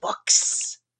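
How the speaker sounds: small, tiny, gnomish librarian character voice. Voicing the tiny gnomish librarian greeting the group: voicing a tiny gnomish librarian. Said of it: "in her very typical manner just goes".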